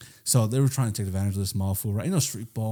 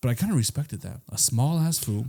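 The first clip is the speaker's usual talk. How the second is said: ordinary talk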